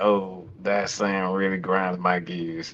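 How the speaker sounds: forced out through gritted teeth and clenched jaw. Reacting with annoyance to the phrase hate watch: through gritted teeth. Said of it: "I'm gritting my teeth saying".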